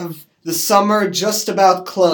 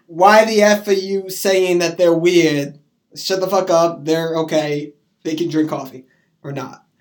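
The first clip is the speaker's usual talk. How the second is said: ordinary talk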